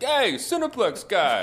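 very high put-on New York street accent, calling out. Mimicking people who call out to him on the street: New York accent. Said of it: "like in like a New York accent".

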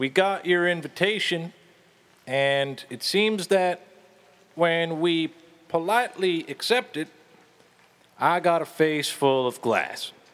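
shouting with echo. Voicing a character calling into a castle's echoing halls: shouting down echoing halls. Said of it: "he just shouts his voice down the echoing halls".

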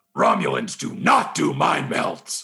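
very slow, rough, creaky, dragged-out voice. Doing an impression when asked for one: Worf impression. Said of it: "could you do a Worf impression".

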